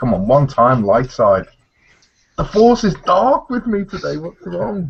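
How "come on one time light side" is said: cheeky, playful, mischievous, begging tone. Rolling dice for a mind trick, giving a cheeky plea. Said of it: "give him a cheeky".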